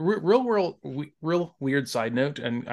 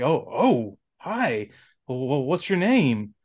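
awkward, hesitant, slow, halting delivery. Retelling how Spike greets the girl awkwardly: imitating Spike's awkward greeting. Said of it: "it was, like, awkward".

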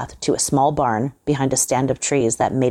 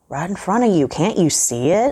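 teasing, jeering, mocking, pitched-up taunting tone; 5 semitones higher than usual. An old man answers Johnson asking where the light is, mocking. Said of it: "mocked the old man".

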